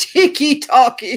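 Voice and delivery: put-on very loud, high British accent. Repeating a boyfriend's phrase read from chat: British accent. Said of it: "I must say it like a Brit".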